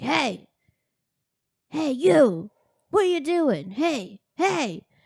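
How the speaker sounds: put-on, high, drawn-out hollering. Retelling how a man across the street called out: imitating a man yelling. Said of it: "yelling at us across the street".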